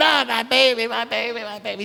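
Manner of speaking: high, frantic, distressed wail.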